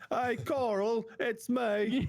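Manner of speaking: very high, slow voice, every word drawn out. Doing an impression of Rick from The Walking Dead: Rick Grimes voice. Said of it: "Rick from The Walking Dead".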